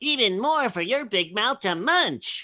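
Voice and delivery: high-pitched cartoon bee character voice. Recreating a cereal commercial line for the interviewer: Honey Nut Cheerio Bee voice. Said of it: "That was the uh, Honey Nut Cheerio Bee".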